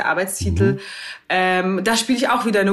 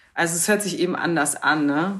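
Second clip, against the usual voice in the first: ordinary delivery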